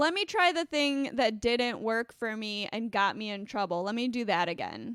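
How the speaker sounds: plain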